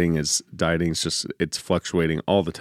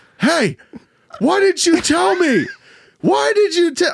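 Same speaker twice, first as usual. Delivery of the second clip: put-on, very high-pitched, loud shrieking yell; 6 dB louder than usual. Retelling a question once yelled at another person: imitating own yelling. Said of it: "I remember yelling to Lydia".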